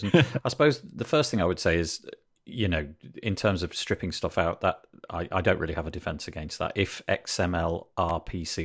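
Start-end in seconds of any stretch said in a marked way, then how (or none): 6.7-8.7 slow, deliberate, careful letter-by-letter pronunciation. Defending WordPress in a discussion, saying a technical term slowly and carefully. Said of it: "I had to really say that slowly".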